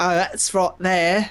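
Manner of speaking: bad put-on British accent. Retelling a social studies teacher making fun of the british: imitating a horrible british accent. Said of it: "he did this horrible British accent".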